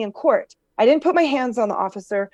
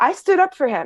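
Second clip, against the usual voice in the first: normal talking voice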